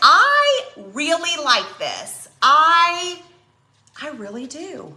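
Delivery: genuinely surprised, high and drawn out. Reacting to a finished craft project: sounding surprised. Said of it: "I know I sound so surprised".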